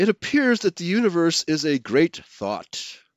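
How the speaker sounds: usual speaking voice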